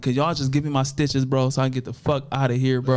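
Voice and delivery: plain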